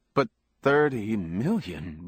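plain reading voice

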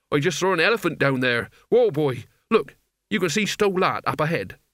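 usual speaking voice

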